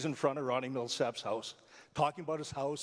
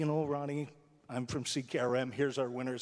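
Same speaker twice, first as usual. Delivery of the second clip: ordinary talk, nothing marked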